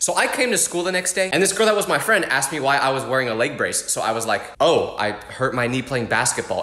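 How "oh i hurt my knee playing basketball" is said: downcast, mournful, really sad delivery. Retelling telling a friend about a hurt knee, imitating own sad tone. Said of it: "I said it in a really sad tone like that".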